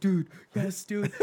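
put-on high, nearly out of breath with excitement. Retelling own reaction to a friend's news: imitating own breathless excitement. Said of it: "almost out of breath".

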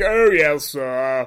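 comically posh British servant voice, pitched low. Imitating the posh British chauffeur from a film: Maxwell posh British chauffeur voice. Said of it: "the most, like, hilariously, like, posh British chauffeur".

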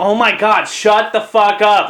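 slow, drawn-out outburst, each word leaned on. Retelling a moment on a flight beside his wife, saying it really loud. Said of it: "really loud".

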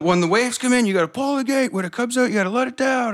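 high-pitched, loud screaming. Retelling how a volunteer firefighter directed people, the speaker acts out his screaming. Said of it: "he just started screaming".

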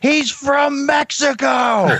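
drawn-out high scream.

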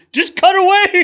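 exasperated, very high, loud mock squeal.

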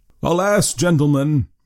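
high, somewhat dismayed cry. Reading fiction, a man questioned at a village election answers the gentlemen: crying out, somewhat dismayed. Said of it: "cried Rip, somewhat dismayed".

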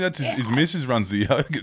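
plain

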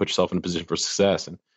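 normal talking voice

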